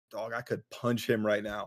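ordinary talk

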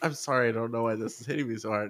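put-on blubbering, crying voice. Recalling crying too hard to talk, retelling own blubbering. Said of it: "And blubbering, and then I was like".

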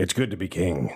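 low, lordly, regal pronouncing voice. Asked for their line, the speaker gives a Flame King impression. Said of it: "my impression is Flame King".

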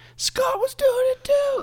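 put-on very high shriek like a crying, screaming child. Recalling another kid being grilled in the kitchen: imitating a kid screaming. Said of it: "he was screaming".

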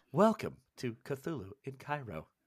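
put-on automated text-to-speech voice. Podcast host opening the episode, doing the TikTok text-to-speech voice. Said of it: "Can we do the TikTok voice?".

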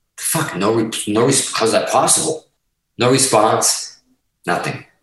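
normal talking voice

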